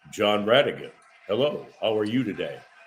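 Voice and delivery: very deep baritone voice. Retelling a familiar voice greeting him by name, in Tom Hicks's deep baritone voice. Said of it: "Tom Hicks also had a deep, deep baritone voice".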